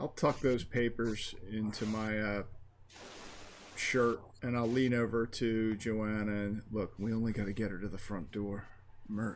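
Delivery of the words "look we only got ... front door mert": very quiet hushed speech, growing quieter. Speaking in character, leaning over to Joanna: very quiet voice. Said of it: "I'll very quietly say".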